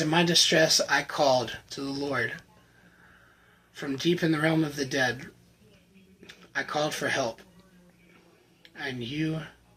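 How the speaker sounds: getting choked up. Reading the bible verse that speaks to them most, choked up. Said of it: "I'm getting choked up".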